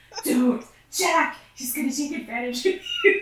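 put-on character voice with swooping pitch. Retelling Misha speaking to Jack, the speaker does the Castiel voice. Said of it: "doing the thing in the Castiel voice".

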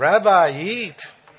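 Yiddish-inflected speech.

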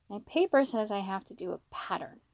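plain

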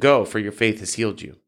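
plain reading voice

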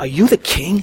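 put-on, soft, incredulous, disbelieving tone. Retelling a man questioning a beaten, homeless carpenter, mock-incredulous. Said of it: "in a credulous way".

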